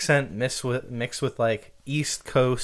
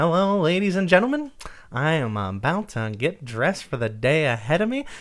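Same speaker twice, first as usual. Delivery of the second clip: put-on old-Hollywood transatlantic accent; 4 semitones higher than usual. Imitating Report of the Week getting up in the morning: transatlantic speech. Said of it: "he actually kinda has that transatlantic speech".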